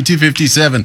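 ordinary delivery

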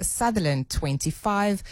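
ordinary talk

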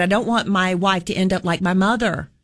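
normal talking voice

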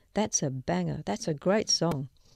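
ordinary delivery

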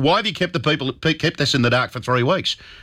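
normal talking voice

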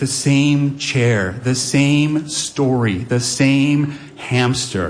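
very slow weary list with stress on SAME.

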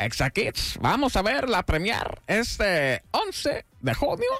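high cartoonish villain voice. Hosts promoting a movie premiere, one invites viewers in a Gru voice. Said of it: "Ahora invita a los Gru".

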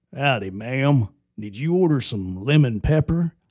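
put-on cowboy voice. Imagining a horseback wing delivery at the door: delivery cowboy voice. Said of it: "Wingstop cowboy".

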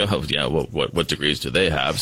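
mock dismissive, amused scoffing chuckle under the breath. Imitating someone asked about another economist: imitating someone chuckling under breath. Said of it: "he kind of chuckles under his breath".

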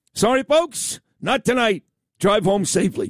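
big, booming announcer voice over speakers. Imitating the big voice announcing the cancelled show to the packed arena: imitating the big voice announcing. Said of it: "the big voice comes on and goes".

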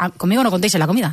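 ordinary delivery

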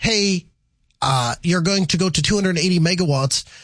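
ordinary talk

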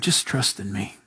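still, small, whispered voice. Voicing the Lord answering the thrashing crowd: God's still small voice. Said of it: "It's the still, small voice".

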